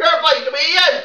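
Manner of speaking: yelling drill sergeant voice. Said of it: "you don't have to yell it".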